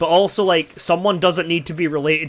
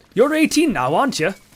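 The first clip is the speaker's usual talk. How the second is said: bad, rough, shoddy put-on Welsh accent, pitched up; 8 semitones higher than usual. Speaker retelling what a man asked them, shit Welsh accent. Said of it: "I apologize for my shit Welsh accent".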